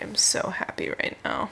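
soft, whispered, deadpan fake happiness. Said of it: "I'm smiling on the inside".

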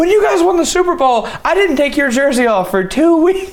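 acted, very high, shrieking gush. Retelling his mom's first words to a football player beside her: retelling mom's screaming. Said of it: "She is like screaming through me".

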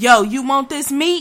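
very loud, high yell projected across a room. Picturing someone next to you offering meat: imitating someone yelling. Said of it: "yelling like".

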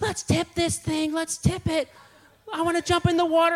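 very high screaming voice. Retelling what Joanna shouted out on the water, retelling Joanna screaming. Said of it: "Joanna screaming".

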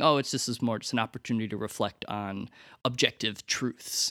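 ordinary talk

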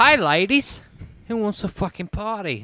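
put-on strong Australian accent. Retelling chatting up some ladies at a skateboard demo: strong Australian accent. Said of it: "His accent's so hard".

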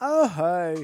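loud, casual delivery. Doing a short impression for friends who asked: Peyton Manning impression. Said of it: "an impression of Peyton Manning".

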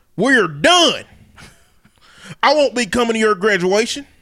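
put-on country dad voice, laid on full. Reading out a father's text to his daughter after the prom, in a racist country daddy voice.

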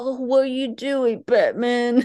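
put-on Brooklyn accent. Retelling a scene, quoting the police chief speaking to Batman: raspy Brooklyn accent. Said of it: "the one with like the Brooklyn accent with the raspy voice".

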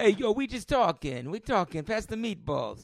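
bad, unconvincing Italian-American accent. Joking around during a conversation, in a bad Italian-American accent. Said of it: "Can we drop the bad accent?".

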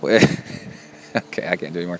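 plain

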